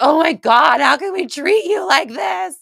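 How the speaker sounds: very high, drawn-out sobbing wail. Retelling weeping in meditation over how Earth is treated: imitating own bawling. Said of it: "just bawling".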